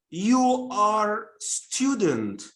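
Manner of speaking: unnatural drawn-out delivery. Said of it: "don't say, for example".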